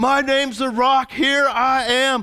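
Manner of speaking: mock yelling, man's voice. Retelling a man showing off to a crowd, imitating someone yelling. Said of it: "and he starts yelling it out".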